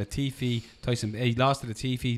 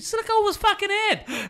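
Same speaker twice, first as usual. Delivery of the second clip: put-on Boston accent, higher and louder; 5 dB louder than usual. Repeating another speaker's line, Mark Wahlberg voice. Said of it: "said as Mark Wahlberg as possible".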